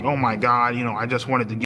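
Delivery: imitated tearful, crying voice. Retelling a phone call where she started crying: imitating someone crying. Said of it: "she started crying up on the phone".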